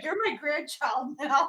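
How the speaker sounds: very slow, drawn-out, whiny pleading voice. Imitating a character whining to people: mock whining. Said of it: "he's just whining to people like".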